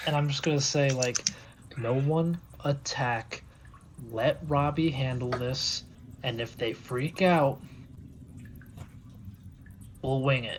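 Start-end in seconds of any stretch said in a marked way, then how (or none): 1.8-10.6 quiet half-whispered voice. Briefing the group in character, half-whispering. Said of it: "I'm gonna whisper".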